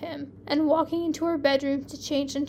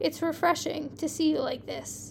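ordinary delivery

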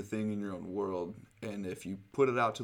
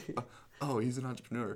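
put-on starstruck, admiring, gushing girlish voice; 4 semitones higher than usual. Describing the girls you don't want: imitating an impressed girl. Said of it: "The girls you don't want are gonna be like".

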